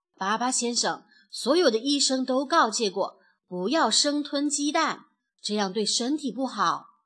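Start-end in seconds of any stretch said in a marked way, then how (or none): none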